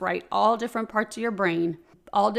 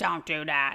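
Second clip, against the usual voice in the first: raspy put-on voice, lower pitch; 5 semitones lower than usual. Voicing an imagined inner critic who smokes cigarettes: raspy voice. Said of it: "the raspy voice".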